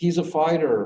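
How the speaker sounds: high, loud, incredulous pleading tone. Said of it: "who were just incredulous".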